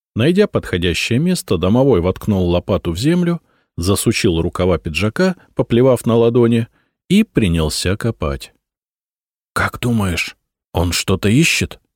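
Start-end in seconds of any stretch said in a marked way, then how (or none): 9.6-11.7 hushed whispering. Watching someone dig, one watcher asks his companion, whispered. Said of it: "шепотом спросил меня Миша".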